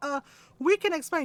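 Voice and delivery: halting, nervous, hesitant, faltering delivery. Retelling a game, the speaker voices the others caught sneaking past Lola, mimicking a hesitant excuse. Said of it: "they all stopped and they went".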